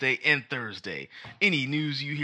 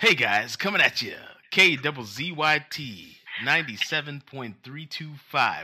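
radio announcer voice; 3 dB louder than usual. Attempting a better radio voice for a station intro: radio announcer voice. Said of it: "See if I could do a better radio voice".

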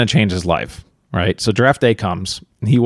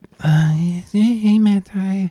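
very high, flat, drowsy sexy voice; 9 semitones higher than usual. Retelling how someone sounded on the phone: imitating a tired, sexy voice. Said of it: "It was kinda, I guess, like that".

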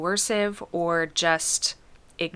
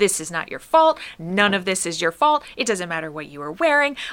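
put-on scream, louder; 6 dB louder than usual. Retelling shouting at a TV character: imitating own screaming. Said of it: "screaming at her".

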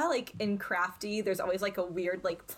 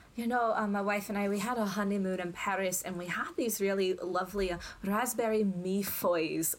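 put-on broad-voiced Scottish accent. Recounting a Bake Off-style episode, act out what Hamish says, in a Scottish accent. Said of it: "hard to say in a Scottish accent".

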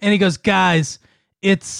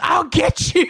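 play-acted scream, pitched very high; 9 semitones higher than usual. Retelling a boy screaming at the door during a nightmare, retelling a scream. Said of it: "he just screams".

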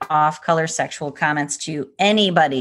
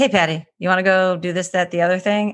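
imitated condescending tone. Retelling how a young daughter asks to hang out: imitating a condescending tone. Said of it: "she usually says it with condensation in her voice".

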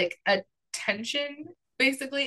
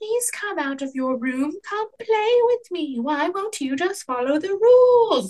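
put-on small child's voice, high and raised, calling out; 6 semitones higher, 6 dB louder than usual. Retelling a story where a voice calls from the hallway, in a little child's voice. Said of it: "A little child's voice".

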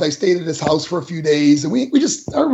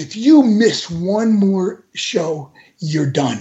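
mock stern and sad voice. Retelling a warning given in an office: imitating a stern, sad warning. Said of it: "with this really stern look and sadness about him".

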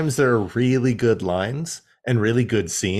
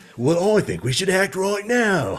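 bad, high-pitched Cockney accent; 7 semitones higher than usual. Complaining about Scorponok in Kingdom, quoting his line in a bad Scorponok Cockney accent. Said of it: "That's not even a Cockney accent".

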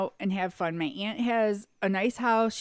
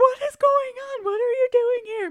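play-acted crying, very high-pitched, shrill, loud, tearful; 7 dB louder than usual. Retelling a surprise meeting with an aunt: imitating someone crying. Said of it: "And then she starts crying".

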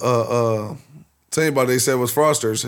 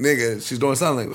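normal talking voice

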